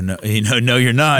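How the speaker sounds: ordinary delivery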